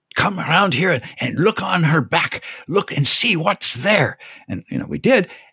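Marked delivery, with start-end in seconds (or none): 0.1-4.1 put-on French-German accent with pitch raised up. Retelling what a professor said at a cathedral: imitating a French-German accent. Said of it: "with his French-German a-, accent, he says".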